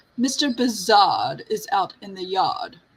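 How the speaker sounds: put-on prim, proper butler voice. Telling a joke, the butler answers Rabbit in a put-on prim, proper butler voice. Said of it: "a butler, all prim and proper".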